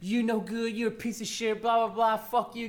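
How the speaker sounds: angry woman, heated, ranting, telling-off delivery. Recounting a woman coming into your room, retell her yelling at you. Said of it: "starts yelling at me".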